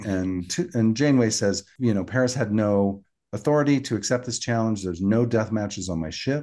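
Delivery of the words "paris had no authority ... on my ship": normal talking voice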